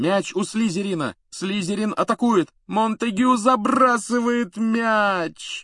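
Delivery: groaning. Narrating a match, reading the commentator's line as he scores it, groaning. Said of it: "простонал Ли Джордан".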